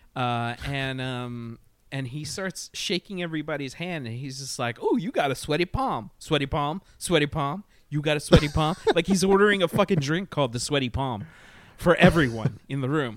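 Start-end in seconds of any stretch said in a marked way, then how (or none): 4.9-8.8 put-on, drawling Midwestern cowboy voice. Retelling a man shaking everyone's hand in a room, midwestern drawl. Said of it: "He's got like a Midwestern drawl".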